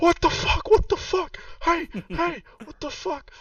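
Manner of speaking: very high, shrill, panicked, terrified screaming. Voicing a masked figure with cut hands, yelling in terror: terrified yell. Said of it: "he yells out".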